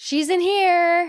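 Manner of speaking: mock very high-pitched yelled shout. Retelling a film scene where a character calls out to his family: imitating a character shouting. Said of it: "and then he shouts".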